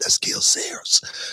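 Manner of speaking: put-on childlike whispering. Retelling pointing out someone across the room to a companion; retelling a childlike whisper. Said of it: "I said it like a little kid, I'm whispering it".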